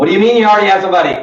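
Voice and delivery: rushed, fast, loud, anxious, nervous blurt. Showing trainees the wrong way to answer an objection: talking fast and loud when nervous. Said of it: "when you get nervous, you talk faster and louder".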